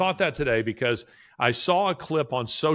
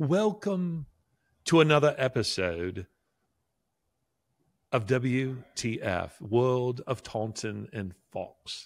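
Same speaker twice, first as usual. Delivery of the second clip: slow, put-on British accent, like a show host. Host opening another episode of the show in a put-on British accent. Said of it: "I think I'm nailing the British accent here".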